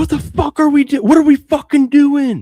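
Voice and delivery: sudden exploding yell, very loud and very high-pitched. Retelling a friend's outburst during an overtime game: imitating someone yelling. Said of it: "Cole stands up and yells".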